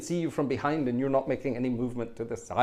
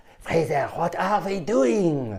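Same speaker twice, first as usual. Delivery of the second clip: put-on French accent, drawn out and high-pitched; 5 semitones higher, 5 dB louder than usual. Retelling what the organist said over the phone: Peter Lorre voice with French accent. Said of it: "Peter Lorre with a French accent".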